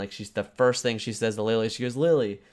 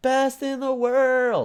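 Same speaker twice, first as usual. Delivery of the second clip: put-on toddler scream, higher; 14 semitones higher than usual. Retelling how a three-year-old daughter celebrated: imitating a three-year-old screaming. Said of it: "she just screamed at the top of her lungs".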